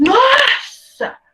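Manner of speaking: desperate exclamation.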